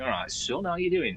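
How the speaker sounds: northern English accent. Running through British regional accents, the speaker does the next one: Northern English accent. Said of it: "And then you've got your Northern".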